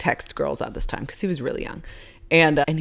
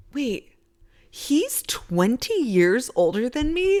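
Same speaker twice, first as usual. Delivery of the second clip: mock earnest, deadly serious tone, pitched up; 8 semitones higher than usual. Retelling what a friend asked in the salon: imitating someone asking very seriously. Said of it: "so serious".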